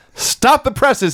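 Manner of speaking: put-on shrill, very high shrieking scream. Retelling a wrestling segment where Eddie screams: imitating a scream. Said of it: "he screams".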